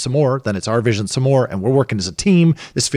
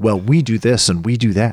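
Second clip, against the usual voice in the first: put-on, puffed-up, proud, boastful tone. Retelling what proud relatives say at the table: imitating proud relative. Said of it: "they're so proud and they're like".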